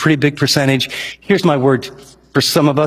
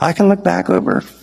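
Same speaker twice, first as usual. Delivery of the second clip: bad put-on old man voice, higher; 4 semitones higher than usual. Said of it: "he talked like this".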